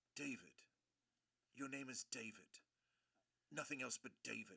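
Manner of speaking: put-on soft, low-pitched English accent. Retelling how the mother of a girl he dated insisted on his name, English accent. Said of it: "in her English accent".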